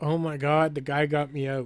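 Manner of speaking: usual speaking voice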